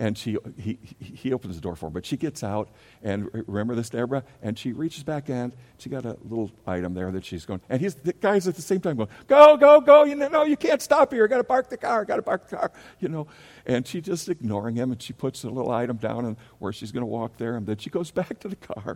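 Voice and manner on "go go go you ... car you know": very high, shrill, very loud screaming. Retelling how a guy yelled at a slow older woman, imitating a man screaming. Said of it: "he's still screaming".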